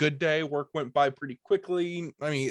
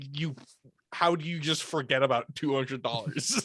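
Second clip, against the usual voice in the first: put-on angry voice; 4 dB quieter than usual. Retelling the second-shift worker's reaction to found cash: imitating someone angry. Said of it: "actually pissed".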